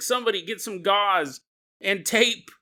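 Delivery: called out high and rising, hopeful.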